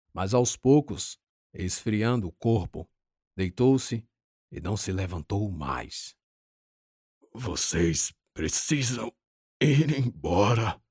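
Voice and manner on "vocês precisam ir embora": slow, pained groaning moan. Salomão, hurt and lying down, speaks to the others, moaning. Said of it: "disse gemendo".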